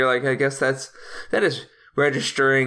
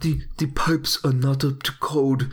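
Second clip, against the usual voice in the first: put-on German accent. Doing a Werner Herzog impression in a gritty home-buying movie: Werner Herzog impression. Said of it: "if you got a good German accent".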